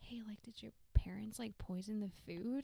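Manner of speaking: put-on whispered voice. Retelling asking a best friend a question in third grade: imitating own past whisper. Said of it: "whisper in her ear".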